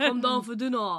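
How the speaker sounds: northwest London accent. Discussing London accents, the speaker demonstrates a northwest London accent. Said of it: "If you wanna do like a northwest London accent".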